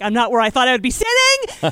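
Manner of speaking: loud, swooping, freaked-out, flustered outburst. Recalling a call that came ten minutes early: retelling freaking out. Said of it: "I freaked the fuck out".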